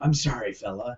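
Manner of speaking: quiet, hushed half-whisper under the breath. Retelling a scene, a man apologizes to the guy he is handcuffing: half-whisper. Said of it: "he whispers to him".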